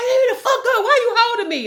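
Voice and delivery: furious, enraged shout pitched very high. Retelling being held from behind in a fight, acting out being mad. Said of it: "I'm getting even more mad".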